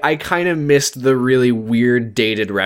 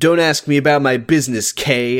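plain

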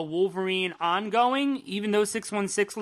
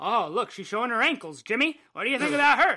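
put-on old-timey 1940s-style talk; 2 semitones higher than usual. Acting out friends teasing in how they talked in the forties: 1940s-style talk. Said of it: "that's how they talked in the forties".

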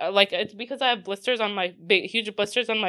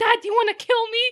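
put-on very high, freaked-out, panicked shout; 13 semitones higher than usual. Recounting a panic attack and a jaywalking father; retelling a shout at dad. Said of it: "So I start shouting at my dad".

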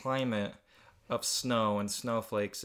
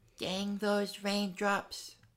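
put-on very high-pitched, lisping little-kid voice; 9 semitones higher than usual. Voicing a three-year-old snowflake character's line, in a lispy little kid voice. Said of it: "We'll do a little lispy one. A little kid".

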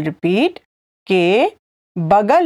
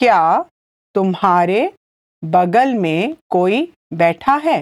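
very slow, halting, broken into pieces; 2 semitones lower than usual. Teaching a Hindi phrase, the speaker repeats it for listeners, said again slowly. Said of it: "I'll say it again slowly".

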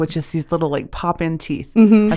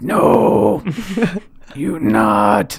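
rough, creaky character voice; 4 semitones higher than usual. Showing how lines from Karate Kid Two get voiced: imitating Sato's voice. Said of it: "Sato's voice the entire time".

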